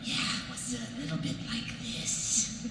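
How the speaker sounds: high, creepy villain voice.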